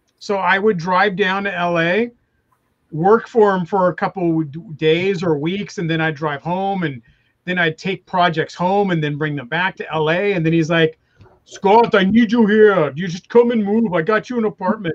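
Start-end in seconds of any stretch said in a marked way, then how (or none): 11.4-15.0 put-on, heavy, exaggerated German accent. Retelling what a boss told him: Arnold Schwarzenegger impression. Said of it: "You work for Arnold Schwarzenegger?".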